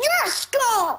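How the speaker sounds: shouting. A boy told it's a school night answers his mom, shouting. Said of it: "and he shouts".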